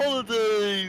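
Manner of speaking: mock cheerful, loud, slow and drawn out.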